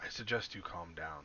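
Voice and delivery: whispering close. Player's character teleports behind a man and speaks into his ear: whisper in his ear. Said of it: "in his ear I'm gonna whisper".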